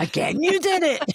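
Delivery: put-on scolding tone, very high, New York accent.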